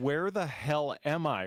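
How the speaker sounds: ordinary talk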